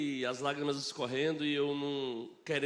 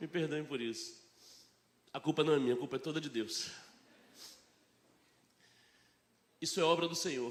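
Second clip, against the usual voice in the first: tearful, crying voice while speaking. Sharing a testimony with the church, crying while speaking. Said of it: "eu nem comecei e já tô chorando".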